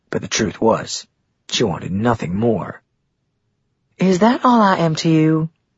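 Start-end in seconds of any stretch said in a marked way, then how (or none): 3.9-5.5 playful teasing, lightly raised pitch. Narrator reading a woman's question to the man who flirted, in a teasing voice. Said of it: "she asked in a teasing voice".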